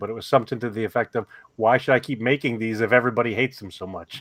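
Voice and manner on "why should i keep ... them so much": usual speaking voice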